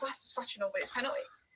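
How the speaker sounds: ordinary talk, nothing marked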